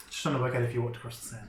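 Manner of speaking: threatening tone. During a tabletop game, questioning another player's character, menacing. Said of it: "He says menacingly".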